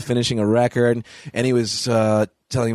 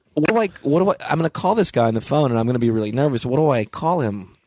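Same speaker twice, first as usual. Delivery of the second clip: ordinary delivery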